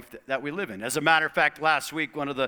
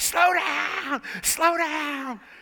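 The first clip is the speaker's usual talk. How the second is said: put-on screaming, very high and very slow, drawn out; 13 semitones higher, 3 dB louder than usual. Retelling the wife screaming over the walkie-talkie: imitating someone screaming. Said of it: "I could hear her screaming".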